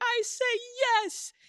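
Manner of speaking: high, loud voice. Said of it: "a testimony video of you somewhere just being like".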